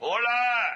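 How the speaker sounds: loud, high, commanding shout from the belly.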